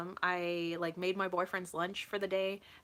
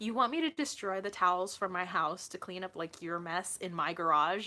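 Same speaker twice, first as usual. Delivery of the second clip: normal talking voice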